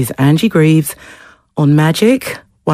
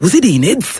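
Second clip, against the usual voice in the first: terrible, bad put-on Welsh accent; 3 semitones higher than usual. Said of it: "Please forgive my terrible Welsh accent".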